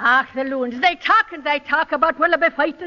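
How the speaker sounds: Irish washwoman brogue. Demonstrating the characteristic phrases of the character Bridget, Bridget's Irish washwoman accent. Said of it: "Bridget O'Halloran, an Irish washwoman".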